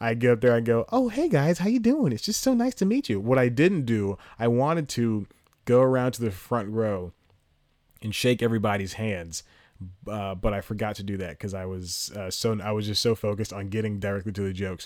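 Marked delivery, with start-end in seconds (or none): 0.9-3.2 put-on wholesome, innocent little-boy voice, very high. Retelling greeting the crowd on stage as a wholesome little boy. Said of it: "this wholesome little boy".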